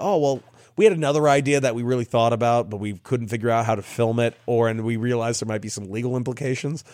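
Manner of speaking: ordinary talk, nothing marked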